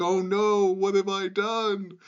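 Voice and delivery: shrill, very high, loud scream. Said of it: "Like he like screams like".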